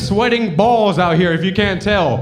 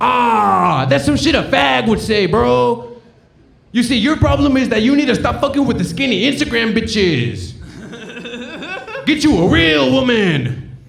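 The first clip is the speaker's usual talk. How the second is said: put-on Mexican accent, drawn-out "ah"; 3 semitones higher than usual. Retelling how Hector cut him off, Hector's Mexican accent impression. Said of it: "it's a Mexican doing a Mexican impression".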